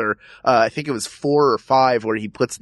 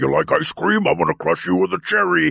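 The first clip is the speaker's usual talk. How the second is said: jokey cartoon villain voice, rough creaky growl; 4 semitones higher than usual. Discussing horror villains, quoting Freddy's later lines: Bugs Bunny-like Freddy impression. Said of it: "he almost became like a Bugs Bunny later on".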